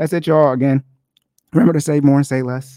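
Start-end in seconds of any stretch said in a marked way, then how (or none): 1.5-2.8 voice cracking and breaking mid-line. Signing off at the end of the episode, voice cracking. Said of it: "My voice cracked".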